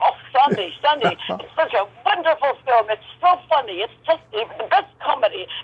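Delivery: put-on German accent. Retelling what a man said to him about a film: German accent. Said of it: "he's very German accent. He goes".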